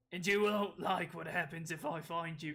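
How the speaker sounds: loud mock Australian British accent. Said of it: "an Australian British accent".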